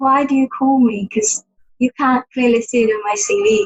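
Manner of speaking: normal talking voice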